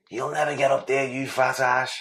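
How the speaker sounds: put-on mild shout, held back. Retelling a prison officer shouting up an insult: imitating Mister Muscle shouting.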